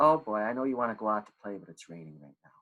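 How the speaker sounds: kind, gentle, matter-of-fact, non-scolding tone. Showing the tone for telling a child it's raining: gentle, not punishing. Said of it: "It's not punishing. It's not like you better never. Rather, it's a bit like this".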